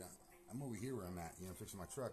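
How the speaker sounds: ordinary delivery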